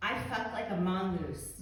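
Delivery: ordinary talk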